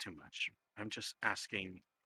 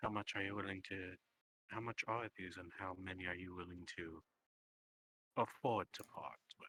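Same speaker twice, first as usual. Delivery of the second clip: hushed, soft, low-toned voice; 2 semitones lower than usual. Voicing a character in a role-play, speaking to another player: soft, low voice. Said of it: "in his tones remaining that soft, low voice".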